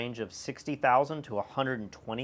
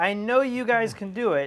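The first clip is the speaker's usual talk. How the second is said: very high, raised kindergarten-teacher voice; 9 semitones higher, 5 dB louder than usual. Retelling what she told the public: imitating a kindergarten-teacher tone. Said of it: "She sounds like a kindergarten teacher".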